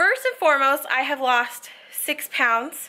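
breathless, panting, winded, out-of-breath delivery. Speaker just ran upstairs to talk to viewers, out of breath. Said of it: "I'm a little out of breath".

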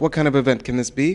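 ordinary delivery

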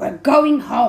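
loud, cross, fed-up growled voice. The cross uncle speaks to the children after the dog trouble, growling. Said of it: "he growled".

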